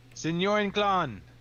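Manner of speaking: high, slow, loud shout. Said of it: "And I just shout out".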